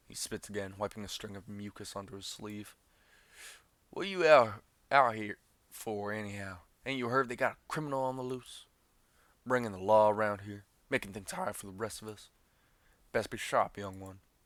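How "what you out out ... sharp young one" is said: very loud, booming drifter voice. Reading the drifter's warning lines aloud in a game; riverbank drifter voice. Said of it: "Drifter. / A man sits on a pile of flotsam".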